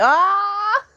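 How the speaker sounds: long, very high-pitched, drawn-out shriek on ah. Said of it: "I'm screaming at you guys".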